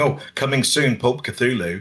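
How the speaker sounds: normal talking voice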